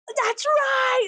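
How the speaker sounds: triumphant, high-pitched cheering shout.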